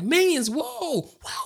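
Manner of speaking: put-on very high, shrill little kid screaming. Telling about a little kid in a packed theater during trailers, imitating him screaming. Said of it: "at the top of his lungs".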